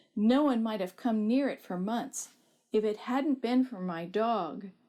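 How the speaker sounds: ordinary delivery, nothing marked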